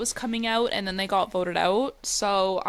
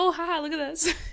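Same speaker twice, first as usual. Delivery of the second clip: put-on, high, giggly, tickled aside; 7 semitones higher than usual. Imagining two people seeing the news coverage: imitating people giggling.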